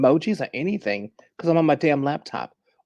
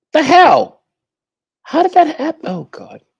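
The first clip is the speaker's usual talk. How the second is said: very high, very loud, shrill, exasperated outburst; 14 semitones higher, 12 dB louder than usual. Greeting an audience while the club deck keeps acting up: frustrated. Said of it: "I'm getting frustrated already".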